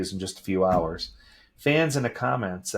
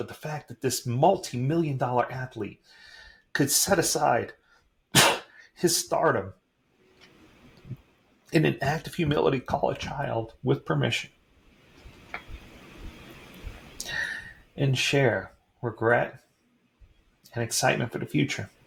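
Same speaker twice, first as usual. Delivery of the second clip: choked up, voice thick with emotion; 4 semitones higher than usual. Speaker describing an athlete's act of humility, choked up. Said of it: "I'm all choked up".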